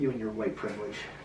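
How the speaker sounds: mock accusatory, parodying tone. Acting out a character who accuses the other speaker: mock accusing voice. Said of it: "I'm getting into character".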